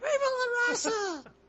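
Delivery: very high-pitched, rousing yell. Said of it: "in his high-pitched voice".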